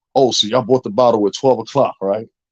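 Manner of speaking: pressing, insistent, police-like interrogating tone. Mocking a podcast host who talks like the police: imitating a podcaster sounding like police. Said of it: "He almost sound like that motherfucker".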